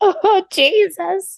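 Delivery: very high, loud, weepy tearful outburst. Retelling a tearful reaction to a show: retelling own crying. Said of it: "Why are you crying?".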